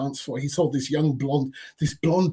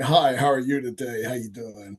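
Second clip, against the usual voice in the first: awful, cheesy fake put-on American accent; 2 semitones lower than usual. Imitating the man they called the midnight DJ, in an awful fake American accent. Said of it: "he had this awful fake American accent".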